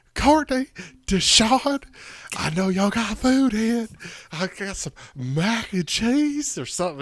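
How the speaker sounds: overacted, over-the-top, very high, drawn-out call. Retelling a kid's imitation of Big Shirley asking for food: overacted Big Shirley impression. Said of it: "really overacted it".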